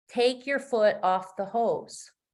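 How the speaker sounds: usual speaking voice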